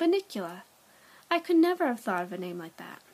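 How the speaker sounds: ordinary delivery, nothing marked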